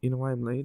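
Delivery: soft, hushed half-whisper under the breath. Retelling arriving late to a party, retelling a half-whisper. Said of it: "I whisper to him".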